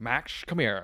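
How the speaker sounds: put-on sassy character voice. Playing the Grinch on request, Jim Carrey's Grinch voice. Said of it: "Jim Carrey's Grinch".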